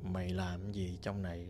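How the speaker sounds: voice dropped low to sound like a man. Retelling what grandma said to a friend in a lowered, man-like voice. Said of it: "Bà hạ cái tông giọng của bà xuống vậy nè. Bạn nói cái giọng này là cái giọng của đàn ông".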